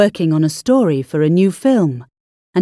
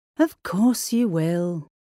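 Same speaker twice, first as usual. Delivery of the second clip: feeble, weak, much quieter and slower; 8 dB quieter than usual. Alex answers Jake: weakly. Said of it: "said Alex weakly".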